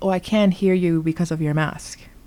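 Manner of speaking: usual speaking voice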